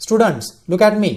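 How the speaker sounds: loud, slowed delivery. Showing how a teacher calls for students' attention: raised voice. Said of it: "you raise your voice".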